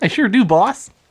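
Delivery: very high cartoon mouse voice. Answering the host's question about pulling the scores, in Pinky voice. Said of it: "what was that voice?".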